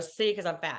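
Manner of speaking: ordinary delivery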